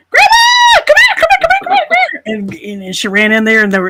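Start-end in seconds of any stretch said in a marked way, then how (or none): 0.1-2.2 put-on very high, loud, squealing child voice. Retelling how a kid called grandma from the other room: imitating a child squealing. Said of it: "squealed from the other room".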